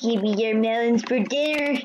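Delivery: creepy, sinister, unsettling put-on voice. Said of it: "That sounds even more creepy".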